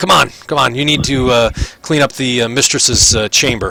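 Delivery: impatient, bossy prison guard voice. Some other guards come for the captives and one gives them orders, guard character voice. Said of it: "he grabs you guys. Um, uh, some other guards come. These ones you guys don't know their names, and um, he's like, / some other guards come".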